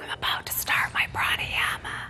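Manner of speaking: loud, forceful, all-breath, open-mouthed whisper. Teacher demonstrating a pranayama exercise for students, in a really loud whisper. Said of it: "Really loudly".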